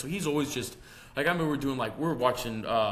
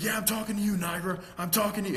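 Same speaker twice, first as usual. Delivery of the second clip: high, angry, coach-style barking voice; 8 semitones higher than usual. Retelling a coach yelling at him after a pass: imitating a coach ripping into him. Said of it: "And just ripped my ass".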